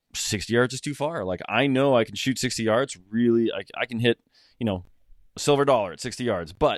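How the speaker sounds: normal talking voice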